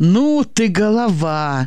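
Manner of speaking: full of admiration. One man praises another's plan, admiring. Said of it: "восхитился Васька".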